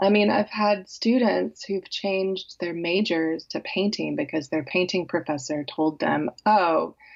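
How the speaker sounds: plain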